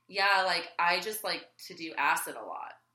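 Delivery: ordinary delivery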